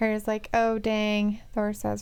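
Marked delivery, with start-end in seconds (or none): none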